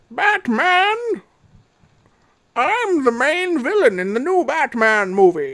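very slow, mocking villain voice, every word drawn out. Describing how Bane sounds in the new Batman movie, mocking Bane voice. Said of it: "They fucked up his voice".

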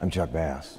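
low put-on American accent. Asked to say a catchphrase in the american accent: american accent. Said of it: "can you just say I'm Chuck Bass in the American accent?".

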